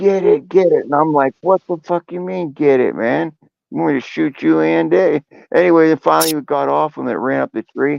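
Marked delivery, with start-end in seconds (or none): 0.0-0.9 put-on screeching girlish shriek, pitched high. Retelling a stepdad's cries while an animal runs over him: imitating shrill screaming. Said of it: "He's screaming like a girl".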